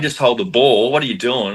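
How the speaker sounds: play-acted, frantic, panicked yelling. Retelling a late-game moment, imitating own panicked yelling. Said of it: "I'm in a complete panic, going".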